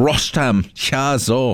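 very high, squeaky German accent. Running through songs just played, the speaker says an artist's name; German accent. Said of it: "I always want to say it in a German accent".

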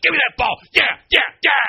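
acted loud aggressive voice. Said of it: "why are you so aggressive?".

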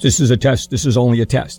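ordinary delivery

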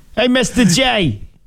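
put-on very high robot voice, Jersey–New York accent. Showing a co-host a possible robot voice setting, in a Jetsons robot Jersey accent. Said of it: "a Jersey, New York accent on her".

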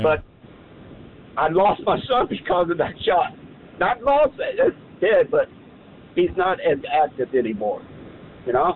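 on the verge of tears, fighting them back. Telling another speaker about losing his son, on the verge of tears. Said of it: "I'm fixing to cry".

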